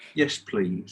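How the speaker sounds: put-on sheepish voice. Retelling the manager asking to bring the drums back: imitating a sheepish reply. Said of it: "very sheepishly".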